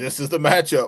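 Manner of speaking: mock sarcastic tone. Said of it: "I sarcastically even said".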